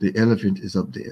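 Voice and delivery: calm, quiet, matter-of-fact tone. Quoting the Zulu guide sitting on the edge of the Jeep, retelling a calm voice. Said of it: "he just says in a calm voice".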